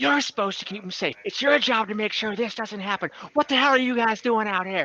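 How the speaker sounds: high-pitched, furious, angry berating tirade. Game master voicing Henny shouting through open windows: Henny screaming at someone. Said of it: "she is just screaming".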